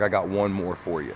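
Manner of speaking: ordinary delivery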